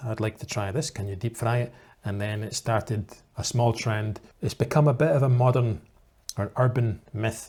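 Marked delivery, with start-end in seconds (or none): none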